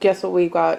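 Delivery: normal talking voice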